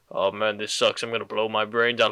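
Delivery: deadpan, flat, very low monotone. Acting out how you would say it: flat monotone. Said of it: "you say it in like the most monotone way ever".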